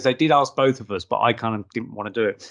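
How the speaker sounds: ordinary talk, nothing marked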